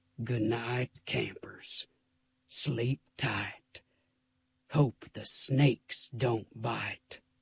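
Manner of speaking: low, hushed, growly scary movie-trailer voiceover. A character bids the campers good night in a low, growly trailer voice. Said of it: "his voice going even lower and growlier than it had been before".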